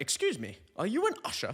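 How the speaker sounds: nice, middle-aged, high, swooping British lady voice. Retelling how a middle-aged lady asked about being an usher: imitating a British lady. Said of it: "Don't know why she would be British".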